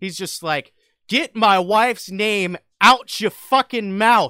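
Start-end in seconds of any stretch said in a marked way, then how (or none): 1.1-4.3 raw, loud, pitched-up shouted outburst. Retelling the slap at the Oscars, imitating Will Smith shouting. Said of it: "he shouts".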